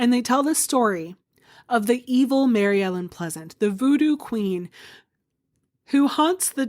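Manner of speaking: voice caught up in feeling, breaking off. Telling a ghost-tour story about a voodoo queen, getting really emotional. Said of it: "I'm getting really emotional about this".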